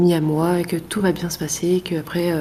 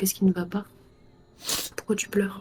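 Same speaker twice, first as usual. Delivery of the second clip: soft, gentle, much quieter and faster; 2 semitones higher, 7 dB quieter than usual. Hand on a crying girl's shoulder, asking what's wrong; soft gentle voice. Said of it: "je prends une voix douce".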